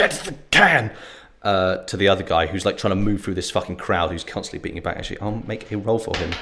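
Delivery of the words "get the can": high-pitched shout, choked and strained. Voicing a character calling to another guy: shouting while choking on blood. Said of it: "choking blood, is gonna shout out".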